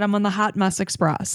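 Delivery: ordinary delivery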